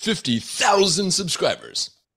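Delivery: very high, booming, swooping monster truck announcer voice. Congratulating another speaker on fifty thousand subscribers: monster truck announcer voice. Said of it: "I have to say that like a monster truck announcer".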